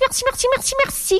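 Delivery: high, chirpy, birdlike twittering on merci. Narrator acts out one of a woman's many ways of thanking, chirping like a bird. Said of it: "elle pépiait".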